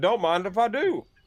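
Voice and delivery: very high, shrill, called-out yell. Voicing Finn accepting the innkeeper's offer of a seat: shouting. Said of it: "Finn's gonna shout".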